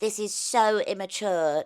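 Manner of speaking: put-on extra British accent. Retelling own childhood reaction to cartoons: imitating younger self, more British accent. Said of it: "I sounded even more British".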